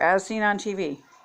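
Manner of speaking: ordinary talk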